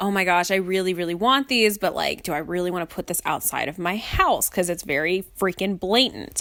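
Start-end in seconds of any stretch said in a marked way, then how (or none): none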